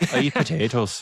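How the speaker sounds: high, butchered mock Irish accent.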